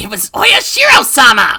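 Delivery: put-on shouting voice. Someone suddenly screams a name, startling a nurse listening in; Rena shouting. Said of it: "Rena suddenly shouted that".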